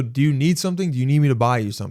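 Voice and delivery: ordinary talk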